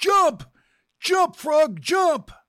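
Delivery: high-pitched, loud yelling shout.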